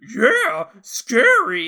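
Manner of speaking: high, very loud cartoon dog voice, big swooping barks. Showing how Scooby answers Shaggy: Scooby-Doo voice. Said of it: "Scooby's dialogue is just responding off of Shaggy".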